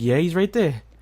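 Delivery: normal talking voice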